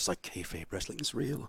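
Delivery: hushed voice. Explaining something to a group, with a lowered voice. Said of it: "he lowers his voice".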